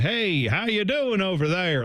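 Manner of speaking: put-on Western accent with New York accent showing through. Describing a movie, imitating an actor trying a Western accent: Robert De Niro's Western accent. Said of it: "Robert De Niro try to do a Western accent".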